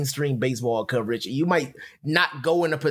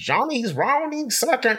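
put-on pitched-up old-time 1932-style radio announcer voice; 10 semitones higher than usual. Arguing that announcers no longer sound like this, doing a 1932-style announcer voice. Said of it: "He just took us back to 1932".

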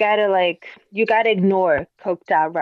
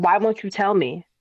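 plain

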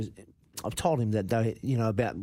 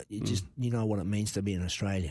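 ordinary talk, nothing marked

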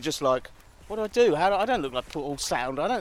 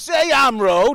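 put-on menacing tone, higher and louder; 6 semitones higher, 10 dB louder than usual. Retelling what the cab driver said back: imitating an intimidating driver. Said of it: "like, say it right".

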